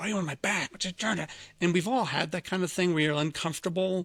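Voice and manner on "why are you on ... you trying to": mock harsh whisper, higher. Retelling a husband laying into his wife on the train: imitating a harsh whisper. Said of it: "harsh whisper".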